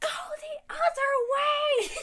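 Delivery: mock very high, very slow, drawn-out panicked scream. Retelling a panicking teacher telling students to leave: imitating a teacher screaming. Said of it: "screaming at us".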